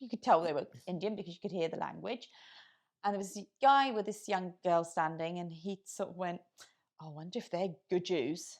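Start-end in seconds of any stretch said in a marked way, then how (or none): 7.0-8.6 put-on soft, plummy, upper-crust posh accent. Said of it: "In that accent".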